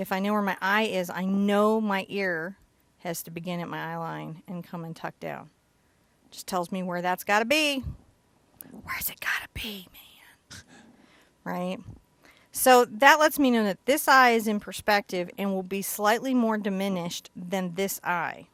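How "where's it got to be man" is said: soft whisper under the breath. Explaining where the ear goes while drawing a face, whispering.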